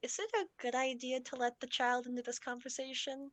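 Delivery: leaning-in half-whisper, pitched high. Retelling a game story where one character leans over to two others, half-whispering. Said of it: "leans over and like whispers".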